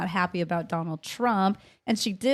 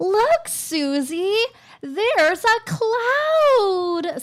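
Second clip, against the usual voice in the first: put-on very high-pitched, very slow, childlike baby voice; 12 semitones higher, 5 dB louder than usual. Showing how you talk to a child, in a talking-to-a-child voice. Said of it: "talking to them like a child ... that children voice".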